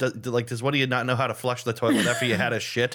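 plain

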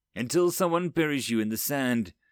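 ordinary talk

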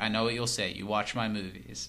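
ordinary delivery

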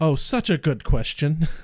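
put-on flat deadpan delivery. Recapping a TV episode where characters argue about names: imitating Giles's deadpan. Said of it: "Giles deadpans".

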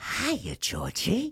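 sinister, high-pitched creepy clown voice. Asked to do your best impression, greet Georgie in the Pennywise voice from the new one. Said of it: "Do your best, Pennywise. Go from the new one".

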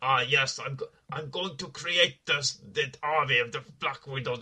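put-on Russian accent. Criticizing a film character, the speaker mimics his fake Russian accent. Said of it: "this fake sort of, Russian accent".

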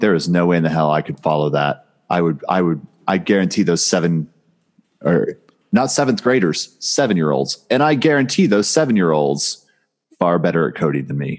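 normal talking voice

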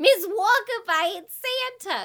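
very high, loud put-on Brooklyn accent. Retelling how everyone said one line in different voices, in a New York accent. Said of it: "I have a New York accent".

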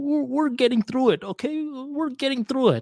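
very high, timid, unconfident, wimpy voice. Retelling a turbulent flight, quoting the plane's captain in a wimpy voice. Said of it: "In a very like wimpy voice".

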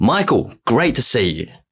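high-pitched called-out voice. Retelling calling out to a man across the street: retelling a yell at top of voice. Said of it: "I just yell out at the top of my voice".

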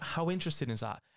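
normal talking voice

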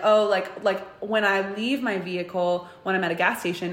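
ordinary talk, nothing marked

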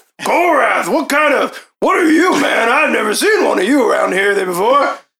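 put-on high, chatty old man voice. In a game, Toko, an old man, questions a stranger he's never seen before.

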